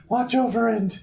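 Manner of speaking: high-pitched put-on girl voice. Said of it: "I don't want you to do the girl voices".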